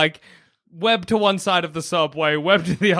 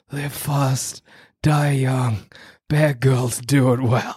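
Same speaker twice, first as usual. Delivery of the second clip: hushed, secretive half-whisper; 4 semitones lower than usual. Acting out a scene, half-whispering a line to him as quietly as possible. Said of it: "I'm going to whisper it to him as quietly as I can".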